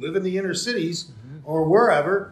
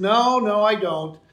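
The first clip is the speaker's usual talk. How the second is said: put-on very slow, patronizing, condescending drawl; 3 semitones higher, 4 dB louder than usual. Retelling her answer to a question on milk prices: imitating a condescending tone. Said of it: "kind of in a condescending way".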